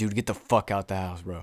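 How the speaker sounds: acted-out anger. Recounting confronting a guy at her house, retelling own angry outburst. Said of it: "I was just getting so fucking pissed off".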